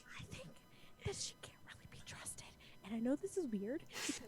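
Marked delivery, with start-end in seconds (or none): 0.2-2.5 confiding, hushed, very quiet whisper, barely voiced. Telling another player a secret suspicion in character: whispering. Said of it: "but I can whisper it to you".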